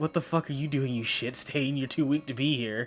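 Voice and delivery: put-on anime character voice. Describing an anime scene where a character comes in, doing Bakugo voice. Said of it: "And it's just Bakugo".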